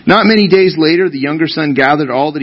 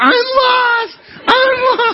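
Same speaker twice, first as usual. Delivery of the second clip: mock very high, slow, drawn-out child-like wail. Retelling how he got lost and called out; imitating Gavin screaming. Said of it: "So he started screaming".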